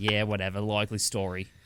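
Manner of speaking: put-on Australian accent. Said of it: "he did a great Australian accent".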